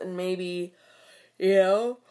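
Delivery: talking through a yawn. Mid-rant about having real discussions, the speaker is yawning. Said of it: "sorry, yawning".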